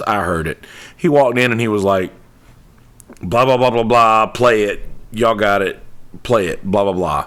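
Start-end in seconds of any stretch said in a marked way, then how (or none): none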